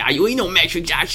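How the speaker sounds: high laughing voice.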